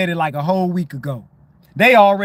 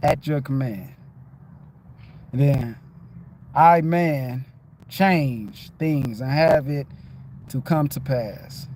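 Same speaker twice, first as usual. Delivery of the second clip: slow, whispered, careful word-by-word reading aloud; 6 semitones lower, 6 dB quieter than usual. The speaker shows listeners how they read: demonstrating how they read. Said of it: "This is how I read".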